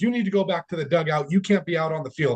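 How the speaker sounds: yelling. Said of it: "yelling at me like I'm some kid".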